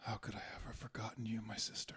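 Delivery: very quiet, soft, barely voiced whisper. A player's character touches foreheads with a woman, whispering. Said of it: "whisper to her in Draconic".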